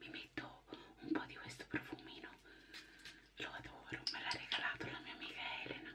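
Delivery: quiet, hushed voice. Getting ready in the bathroom while Chicca sleeps: speaking softly. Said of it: "Parlo piano perché c'è chicca che dorme".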